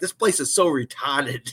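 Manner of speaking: Boston way of talking. Retelling how the sister talks about her new job: imitating sister's Boston accent. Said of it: "my sister in that Boston accent".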